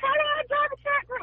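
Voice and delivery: very high, fast, excited, wishful gush.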